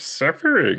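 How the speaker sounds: very high, froggy voice. Asked by another speaker to do Yoda suffering, the speaker tries: Yoda voice, suffering. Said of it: "give us a, a Yoda suffering".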